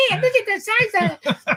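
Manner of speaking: very high, squeaky, helium-like voice. Retelling what the guys said down in the gulf, in a squeaky helium voice. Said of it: "they had that helium voice".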